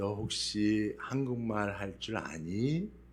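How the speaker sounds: soft, quiet, slow and careful delivery.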